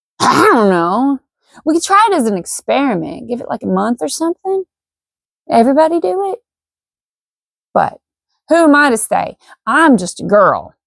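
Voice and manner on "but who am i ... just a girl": heavy tongue-in-cheek sarcasm in a slow drawl. Speaker talking to her audience, sarcastic. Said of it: "I'm being sarcastic right there".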